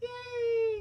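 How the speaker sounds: giggly, laughing, high-pitched squeal.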